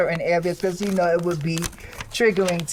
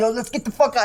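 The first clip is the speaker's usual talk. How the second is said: put-on fed-up, aggressive, angry yelling tone; 4 semitones higher than usual. Recounting the boss getting aggressive in public, retelling an angry yell. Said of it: "He's yelling".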